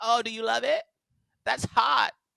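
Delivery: put-on vapid party-girl voice, high, loud, creaky vocal fry. Imitating how Paris Hilton acted on TV: Paris Hilton impression. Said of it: "Paris Hilton was a dumb blonde. Whenever I saw her on T V".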